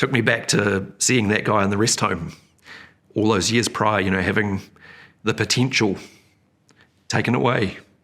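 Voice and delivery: choked up, halting voice breaking mid-phrase. The speaker recalls seeing a man in a rest home years earlier, a bit emotional. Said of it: "sorry, a bit emotional".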